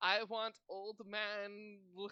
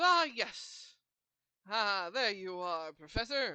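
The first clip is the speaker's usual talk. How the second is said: put-on elderly character voice, louder; 7 dB louder than usual. Voicing an old character greeting the Professor at a table: old man voice. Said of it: "in his old age".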